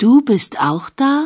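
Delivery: upward rise in pitch at the end. In a language lesson contrasting statement and question: rising question intonation. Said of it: "la întrebare, vocea se duce în sus".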